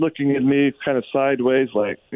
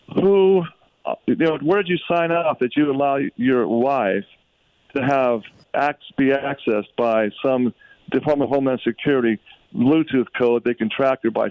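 ordinary delivery

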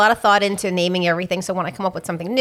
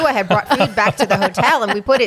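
plain

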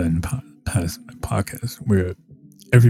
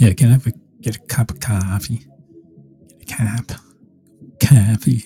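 mock Boston-accented voice; 2 semitones higher than usual. Speaker shows how a Boston accent sounds, ordering coffee, in a Boston accent. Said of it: "I could do a Boston one".

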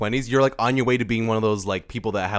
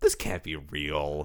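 low, slow, soft deadpan disbelief. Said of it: "And I'm just like".

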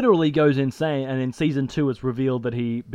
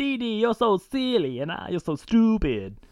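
swooping cartoon boy-genius voice; 8 semitones higher than usual. Recalling an old cartoon show, imitating how its character talked. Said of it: "That's how he talked".

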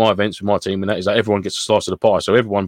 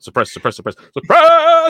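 put-on shouting, much higher and louder; 6 dB louder than usual. Describing the long burst, imitating Mike shouting suppress. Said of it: "stop shouting suppress".

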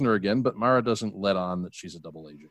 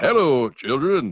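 loud, raised cartoon-character voice; 4 semitones higher, 5 dB louder than usual. Speaker showing how the voice would sound if he did it, Chef from South Park voice. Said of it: "it would probably sound more like Chef when he came back from the dead on South Park".

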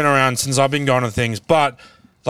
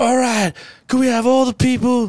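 put-on American accent, very high pitched; 9 semitones higher than usual. Mocking how visiting Yanks talk, in an American accent. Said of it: "I use the Yank accent".

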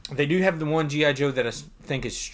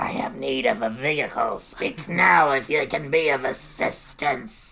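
slow, drawn-out, lisping cartoon villain voice. Answering someone who asks a stranger what it'll be, in a Cobra Commander voice. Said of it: "That was my Cobra Commander".

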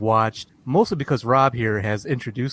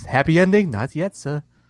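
put-on British accent, pitched up; 5 semitones higher, 4 dB louder than usual. A voice answering a joke about a back alley, in a British accent. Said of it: "Was that a British dude?".

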